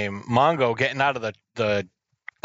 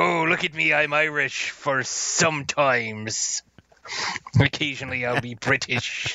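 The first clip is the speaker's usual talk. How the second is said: very slow, drawn-out, put-on pirate accent; 3 semitones higher than usual. Acting out a man describing the accents he does, pirate voice. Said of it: "I don't know why I'm making him sound like a pirate".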